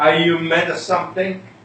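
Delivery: normal talking voice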